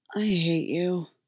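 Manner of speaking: worn-out, exhausted, weary delivery. Reading a story, Jim answers Jay about his cover story; tired. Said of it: "Jim said tiredly".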